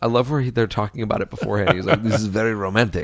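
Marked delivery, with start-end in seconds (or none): 2.0-3.0 fake French accent, lower. Retelling a movie scene and quoting a character: put-on French accent. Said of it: "She's doing the French accent".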